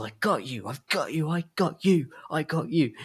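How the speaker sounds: gloating, high, triumphant repeated yell. Describing a chase scene where a character thinks he's won, retelling a yell.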